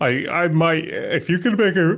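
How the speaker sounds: words stretched by a yawn. Asked about watching Squid Game, the speaker answers while yawning. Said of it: "I'm yawning".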